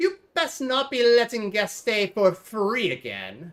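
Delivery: loud, swooping, accusing scold. In a game scene, the innkeeper's wife speaks to her husband, in her voice.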